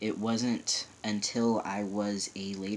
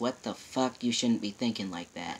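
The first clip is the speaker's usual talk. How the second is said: put-on furious outburst in angry man voice. Retelling a father's reaction to a comment: imitating an angry father. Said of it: "That was pretty much what he kept saying".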